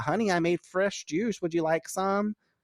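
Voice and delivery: mock sugary, very high-pitched sweet motherly voice. Imagining a group member's mother calling to him, imitating a nice, sweet voice. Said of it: "she sounds so nice and sweet".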